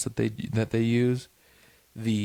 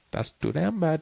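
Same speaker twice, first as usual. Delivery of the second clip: put-on polite, pitched-up customer service agent accent; 6 semitones higher than usual. Correcting the other's imitation of customer service: corrected customer service accent. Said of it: "wrong accent".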